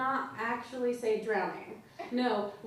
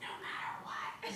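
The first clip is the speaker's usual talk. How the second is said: very quiet, soft, hushed whisper. Showing how that part should be said, whisper it. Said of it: "Whisper it like".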